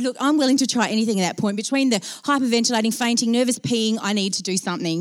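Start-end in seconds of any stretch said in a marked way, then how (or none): none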